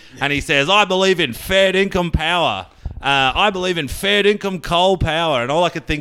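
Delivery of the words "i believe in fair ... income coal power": put-on rough, broad Australian accent, pitched up. Imitating the Prime Minister talking like a rough as guts Aussie. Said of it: "he's talking like a dinky, true blue, bloody, you know, rough as guts Aussie".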